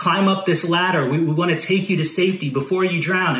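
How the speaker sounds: usual speaking voice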